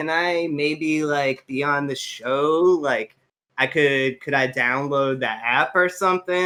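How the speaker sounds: ordinary talk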